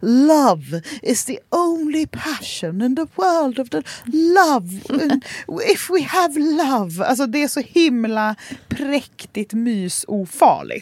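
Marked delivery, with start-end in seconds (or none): 0.0-7.0 put-on sweet, kindly, gentle, high old lady voice. Speaker mocking how cozy TV shows end, in a kind old lady voice. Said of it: "en snäll tantröst som bara".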